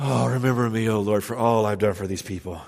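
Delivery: tired, weary voice carried on a heavy sigh. Reading Nehemiah's prayer aloud as it might sound: weary, sighing tone. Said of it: "Is Nehemiah he sighing here?".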